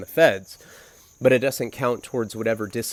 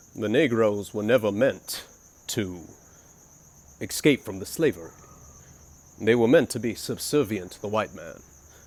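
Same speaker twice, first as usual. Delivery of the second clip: put-on scholarly old man voice. Retelling a cellmate's speech on acid, in a Morgan Freeman voice.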